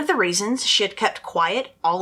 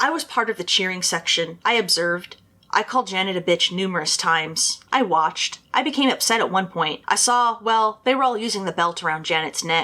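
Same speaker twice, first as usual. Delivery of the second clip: ordinary delivery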